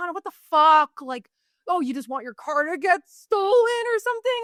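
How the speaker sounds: put-on furious scolding tone, high-pitched. Telling of leaving your keys at Walgreens, voicing your past self: imitating an angry inner voice. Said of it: "like I'll have like this really angry inner voice".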